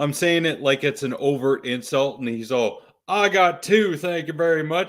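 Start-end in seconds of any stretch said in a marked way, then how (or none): 3.1-4.9 proud, smug, self-satisfied boasting, pitched up. Acting out a man's reply, all proud of himself, mock-proud boast. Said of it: "He's all so proud of himself".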